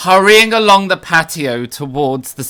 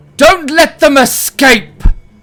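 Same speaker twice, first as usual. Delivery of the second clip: very high-pitched, loud yell; 10 semitones higher, 7 dB louder than usual. Voicing an unseen person whose voice echoes in the night: shouting. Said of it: "someone shouts".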